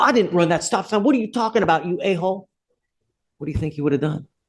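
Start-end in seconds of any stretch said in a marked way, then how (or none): 0.0-2.5 mock hostile, combative, aggressive tone, pitched up. Telling how he could have answered the man who let him go: mock-aggressive retort. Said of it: "If I had come to him aggressive".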